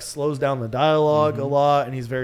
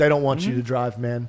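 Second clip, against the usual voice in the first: put-on, serious southern drawl. Picturing a hard conversation in a film: serious Matthew McConaughey impression. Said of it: "the seriousness where he can be like".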